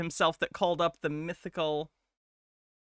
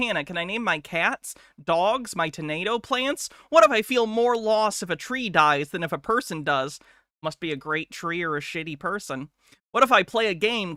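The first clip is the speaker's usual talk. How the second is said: plain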